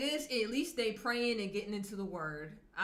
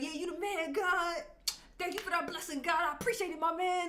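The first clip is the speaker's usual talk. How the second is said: laid-back, casual, slangy street-talk delivery; 7 semitones higher than usual. Imitating how people from rough areas might pray: casual street-style prayer. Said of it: "Maybe that's how they talk. Be like".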